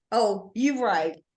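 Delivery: ordinary delivery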